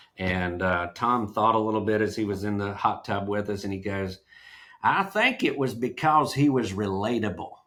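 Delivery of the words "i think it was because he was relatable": put-on Texas accent, easy relaxed delivery. Recalling what Tom said in the hot tub, in Tom's Texas accent. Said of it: "he said it in the Texas".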